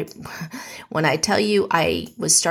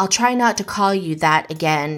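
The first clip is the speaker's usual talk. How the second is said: ordinary talk, nothing marked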